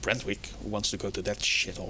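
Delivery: muttered under breath. The dwarf responds, talking more to the air than anyone, muttered under his breath. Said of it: "responds a bit under his breath".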